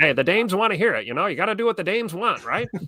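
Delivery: very high-pitched, swooping, put-on old-timey voice. After reading a listener's request on the podcast, answering in old-timey voice. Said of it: "using the old-timey voices".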